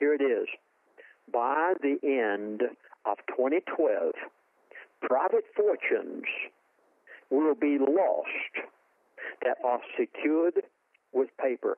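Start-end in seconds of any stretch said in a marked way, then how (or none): 1.3-11.8 slow, deliberate, every word laid down with weight. Speaker pleading with listeners to understand what comes next, said slowly. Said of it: "I said that slowly".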